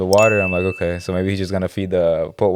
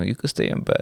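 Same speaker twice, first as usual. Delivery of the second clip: weak, wimpy, soft and breathy whisper; 7 dB quieter than usual. Acting out the voice in your head that says stay in bed: little bitch voice. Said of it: "you got the little bitch voice".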